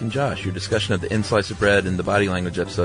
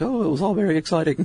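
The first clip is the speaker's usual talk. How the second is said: put-on older British woman voice, higher, slower; 10 semitones higher than usual. Recounting what an interviewed lady said, in an older British lady accent. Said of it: "That's a great British lady accent".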